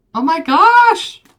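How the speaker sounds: high, loud, slow excited yell of surprise.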